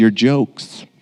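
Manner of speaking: put-on sincere, slightly sarcastic tone. Retelling a daughter's answer about what she can't stand: imitating a sincere, slightly sarcastic reply. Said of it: "with all sincerity and a little bit of sarcasm and says".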